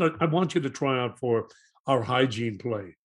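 usual speaking voice

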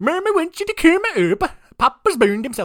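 put-on Scandinavian accent, very high and very loud. Quoting the foster daughter calling the neighbors up: Scandinavian accent. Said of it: "has a Scandinavian accent".

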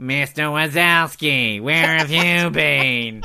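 slow, drawn-out cartoon receptionist voice. Showing who the wife sounds like: Monsters, Inc. desk woman voice. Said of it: "in Monsters, Inc".

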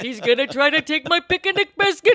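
high, loud, cartoonish voice. Joking about a history lesson on the Ukraine, say it in a Yogi Bear voice. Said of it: "he sounds like Yogi Bear".

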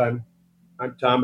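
plain

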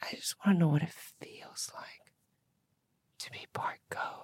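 whispering. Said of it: "do you wanna try and whisper?".

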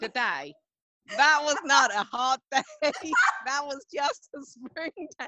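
bad Australian accent. Retelling what the Australians said to them, in a bad Australian accent. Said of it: "I can't do an Australian accent".

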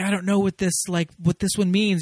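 high-pitched, loud screaming. Retelling a movie scene where a character screams at another: imitating someone screaming. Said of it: "screaming at Evie".

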